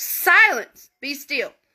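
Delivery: stern, no-nonsense teacher voice. Retelling a command for silence to the sea: imitating a stern teacher voice. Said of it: "can you imagine, like, that teacher voice?".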